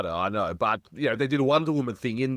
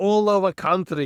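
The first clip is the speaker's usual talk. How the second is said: over-the-top put-on Russian accent, higher and louder; 8 semitones higher, 5 dB louder than usual. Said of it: "that whole accent".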